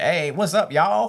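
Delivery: slow Texan drawl, leaning hard on y'all. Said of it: "you sounded like a Texan when you said y'all".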